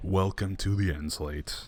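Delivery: sinister, menacing evil villain voice. Video host welcoming viewers to the end slate; evil voice. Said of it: "I say in my most evil voice".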